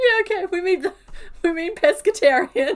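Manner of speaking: loud, high-pitched laughing through the words. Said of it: "I'm sorry for laughing".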